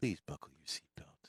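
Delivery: soft, low, really nice, gentle voice. Suggesting a seatbelt reminder, the speaker demonstrates a really nice soft voice. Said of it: "a really nice soft voice".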